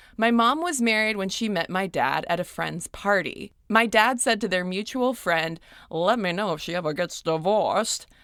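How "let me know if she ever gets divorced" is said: put-on transatlantic-style mid-Atlantic accent. Quoting the speaker's dad talking to a mutual friend, in a mid-atlantic accent. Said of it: "I don't know why I gave him a mid-Atlantic accent".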